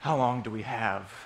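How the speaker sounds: acted trembling, low, slow, quivering voice. Acting out a New York passerby spotting one of these guys, imitating a quivering voice. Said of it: "with a quivering voice".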